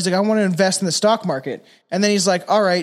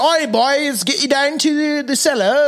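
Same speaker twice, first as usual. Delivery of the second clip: poor put-on British accent; 7 semitones higher than usual. Showing the accents one learns: bad British accent. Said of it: "you just like learn like shitty British accents".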